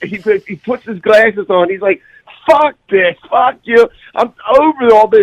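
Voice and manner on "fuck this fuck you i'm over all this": mock fed-up rant, high-pitched angry yelling. Telling of a man's outburst on a plane: imitating a man yelling, cursing. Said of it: "He's like yelling and cursing".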